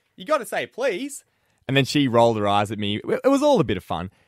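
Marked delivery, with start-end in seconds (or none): 0.2-1.2 acted, high-pitched yell. Retelling calling out across the room to a housemate: imitating own yell. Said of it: "I yelled out across the room".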